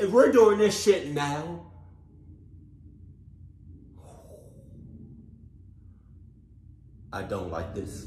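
frightened, scared, breathy whisper. Reacting to the ai footage they are watching, the speaker is scared. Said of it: "I'm scared like a mother clucker right now".

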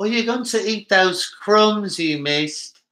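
very high, bad put-on British accent. Repeating a line as someone asked: bad put-on British accent. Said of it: "You got to say that like you're British".

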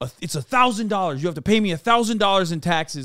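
mock high, chirping yell. Retelling how a border officer yelled at the speaker: imitating someone yelling. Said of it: "fucking yelling at me".

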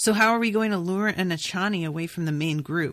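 ordinary talk, nothing marked

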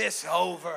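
a little bit forceful, slightly aggressive. Showing the congregation how to say the line: a little bit aggressive. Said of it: "a little bit aggressive".

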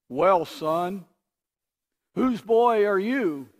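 loud, booming sermon-style voice. Telling a story, the minister asks the boy at the front door, booming voice. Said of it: "The minister's voice boomed out".

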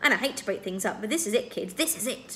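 ordinary delivery, nothing marked

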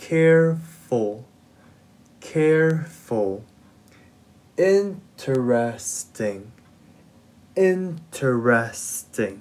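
slow, deliberate, unhurried word-by-word reading aloud. Reading adjectives aloud for learners in a lesson, reading words slowly. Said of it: "Let's read it slowly".

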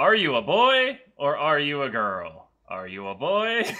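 poor, swooping, put-on professor voice. Playing a professor asking a question, the speaker uses a bad professor voice. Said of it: "That is the shittiest professor voice".

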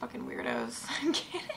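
normal talking voice

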